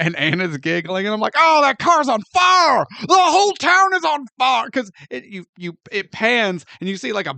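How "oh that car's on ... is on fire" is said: mock alarm, sarcastic, very high and very loud. Retelling watching a movie opening, imitating own sarcastic exclamation. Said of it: "I was being very sarta-, sarcastic".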